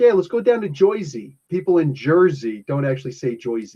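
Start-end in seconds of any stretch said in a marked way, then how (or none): 0.0-1.4 put-on pitched-up Brooklyn accent. Imitating brooklyn guys talking about going to jersey: brooklyn accent. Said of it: "the Brooklyn guys were always like".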